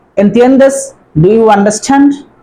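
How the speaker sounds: ordinary delivery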